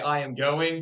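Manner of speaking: usual speaking voice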